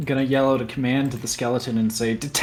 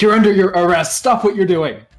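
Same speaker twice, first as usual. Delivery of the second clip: intimidating, loud, high shouted yell; 6 semitones higher, 7 dB louder than usual. A player in a tabletop game yells at a character to intimidate him: yelling. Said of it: "and I'm gonna yell".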